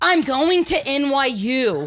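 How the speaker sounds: play-acted very slow, spelled-out, loud, exasperated angry shout. Retelling repeating the news to Nana who can't understand: imitating an angry outburst. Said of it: "I was so mad".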